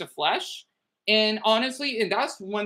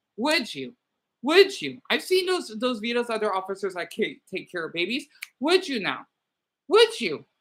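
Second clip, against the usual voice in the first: angry, heated, worked-up, pressing and repeated. Pressing the audience with repeated questions, getting heated. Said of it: "I'm getting so heated".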